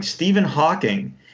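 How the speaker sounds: acted-out, high, matter-of-fact, duh-it's-obvious tone. Retelling answering a trivia question: imitating own answer as if obvious. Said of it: "I said it, like, "Why don't you guys know that?"".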